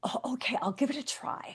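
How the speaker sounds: tentative, soft, hesitant, breathy half-whisper. Showing how people say they will try: saying it softly. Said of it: "you even say it softly".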